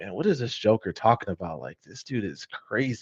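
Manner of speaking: hushed stage-whispered aside. Retelling a remark half-whispered to a friend in the back seat: imitating own past half-whisper. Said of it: "I'm whispering to my friend".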